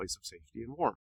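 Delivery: plain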